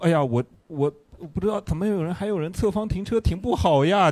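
sly, snide, passive-aggressive mocking sarcasm. Imitating the driving instructor's everyday talk: imitating sarcastic passive-aggressive tone. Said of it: "他日常交流会有点这种阴阳怪气".

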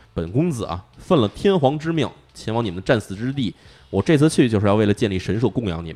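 ordinary delivery

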